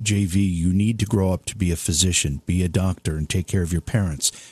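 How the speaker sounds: put-on whisper. Retelling a childhood voice that turned out to be mom: imitating mom whispering. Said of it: "my mom around the corner kinda whispering it".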